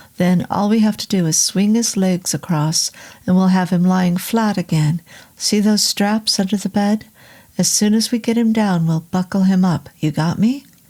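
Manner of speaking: plain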